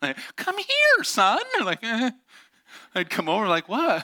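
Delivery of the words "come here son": shrill, very high-pitched, raised calling voice. Retelling his dad calling him over after a fire, imitating dad's high-pitched come here. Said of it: "my dad would get the high-pitched come here".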